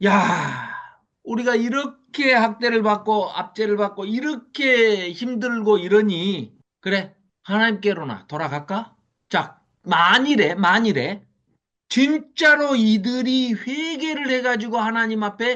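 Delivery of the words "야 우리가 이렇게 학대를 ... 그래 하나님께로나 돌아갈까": feigned, overly heartfelt emotion laid on sarcastically. Reading a quoted passage aloud with emotion, expressive, insincere reading. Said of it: "제가 감정을 넣어서 이제 읽어보면 이런 겁니다".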